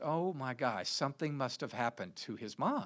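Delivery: plain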